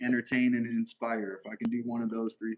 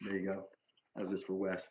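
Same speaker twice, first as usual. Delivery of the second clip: normal talking voice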